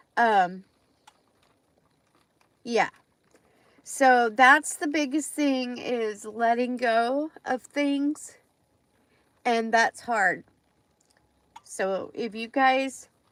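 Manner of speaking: emotional voice welling up, close to tears. Speaker tells her audience about letting go of her dad's things, getting emotional. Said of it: "I'm going to get emotional".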